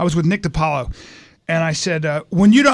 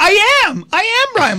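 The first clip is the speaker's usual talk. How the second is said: very high-pitched, slow, drawn-out, excited; 4 dB louder than usual. Retelling being recognized by a bartender: imitating own voice going high. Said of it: "My voice gets high".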